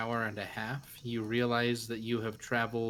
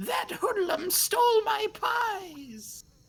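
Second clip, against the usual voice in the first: piercing, shrill, very high voice, crying out; 4 dB louder than usual. A storyteller voices an unseen speaker to the listeners, shrill voice. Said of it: "a shrill voice saying".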